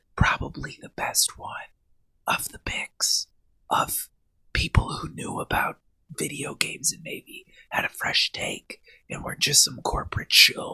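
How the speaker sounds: whispered, hushed, breathy voice. A speaker giving an opinion on a podcast, whispering. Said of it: "I don't know why I'm whispering more".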